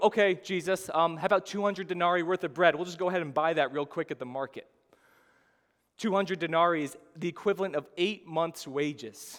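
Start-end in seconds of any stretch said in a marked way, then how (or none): none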